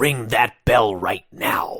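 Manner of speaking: firm, no-nonsense, slow stern delivery. Retelling what a referee said to the camera: imitating a stern order. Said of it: "he very sternly says".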